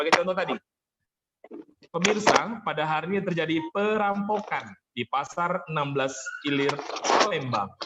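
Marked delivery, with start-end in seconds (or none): 1.9-7.7 perampokan and Palembang stressed and stretched out. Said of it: "kira-kira pada kata mana yang saya berikan aksentuasi".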